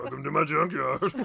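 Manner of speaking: creaky, roughened put-on voice. Told he sounds just like Fat Albert, a speaker does a Fat Albert impression. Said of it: "I didn't know I had a Fat Albert impression".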